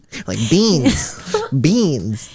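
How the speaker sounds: put-on sing-song Filipino accent, swooping through beans. Asking the other speaker about their pronunciation, imitating how 'beans' was said. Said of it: "Why do you say beans like that?".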